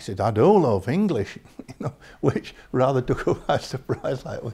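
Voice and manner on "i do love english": put-on raised, chatty Northern English accent. Telling a story about a teacher chatting with a lady, quoting him in a Northern accent. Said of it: "he never lost his Northern accent".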